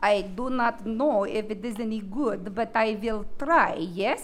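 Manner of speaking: very low, soft put-on Russian accent. Asked by the group to try a russian accent, giving it a go in a russian accent. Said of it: "Can you do a Russian accent?".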